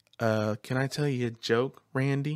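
gentle soft voice. Retelling how he talked in the role, sweet and soft. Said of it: "he talked very sweet and soft".

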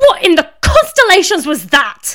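very high, loud, raging, swooping furious roar. Narrating a story, a character turns on another and bellows furiously. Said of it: "Galactica bellowed".

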